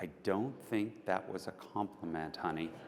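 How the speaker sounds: soft, hushed, close whisper. Retelling what the wife said in his ear: imitating a whisper. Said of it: "my wife whispers in my ear".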